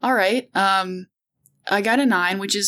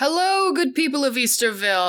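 big, high, showy showman call-out to a crowd; 6 semitones higher than usual. Describing a character bursting into a scene, the speaker voices his greeting: calling out. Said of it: "He's gonna call out".

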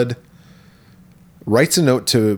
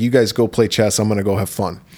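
ordinary talk

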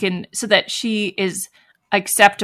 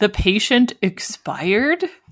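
put-on flat, completely emotionless voice. Retelling what the cop says about the patient: imitating an emotionless voice. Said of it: "with no emotion in his voice".

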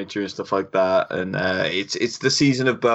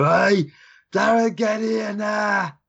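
put-on very high, slow, drawn-out Birmingham accent; 11 semitones higher than usual. Imitating moms in the birmingham area calling their kids: imitating a birmingham mom's accent. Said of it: "Just, just different accents?".

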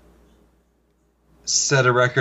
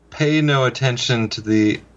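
ordinary talk

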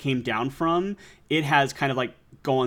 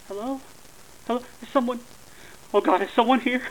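feeble, thin, very high faint calling out; 11 semitones higher than usual. Voicing a stranger calling over crackling comms: very weak voice. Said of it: "the crackle is this very weak voice".

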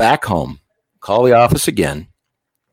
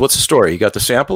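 normal talking voice

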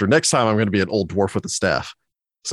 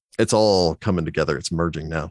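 normal talking voice

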